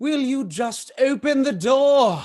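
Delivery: very loud, very high-pitched shouting. Pounding on a door, demanding the person inside open it, yelling. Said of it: "I'm yelling at you".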